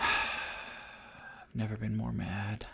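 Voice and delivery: slow, soft, out-of-breath delivery. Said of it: "Is that why you're breathing that way?".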